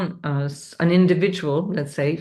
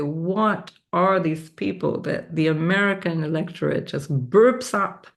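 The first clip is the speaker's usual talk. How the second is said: put-on strong, heavily laid-on Czech accent. Quoting a former professor's remark: imitating Professor Gregor's booming Czech accent. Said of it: "with a Czech, strong Czech accent".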